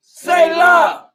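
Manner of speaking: high, loud shouting.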